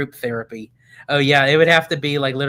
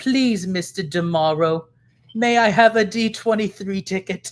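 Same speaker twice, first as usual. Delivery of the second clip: clumsy, bad, high, put-on English accent; 6 semitones higher than usual. Acting out begging for a ticket like Oliver Twist: bad English accent. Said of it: "that was my bad English, spoken language".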